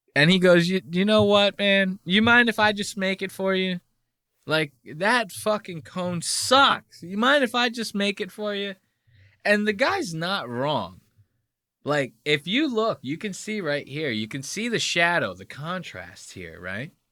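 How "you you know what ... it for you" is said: meek, timid, faltering male voice, pitched up. Retelling what a guy said when offering to make the cone: imitating a timid guy. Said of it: "poor, timid bitch of a guy".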